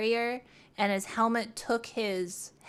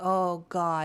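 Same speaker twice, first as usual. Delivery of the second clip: mock-stunned, much lower; 4 semitones lower than usual. Retelling how a man sounded on a call for an ambulance, imitating a stunned man. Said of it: "he just sounded like he was just like stunned locked".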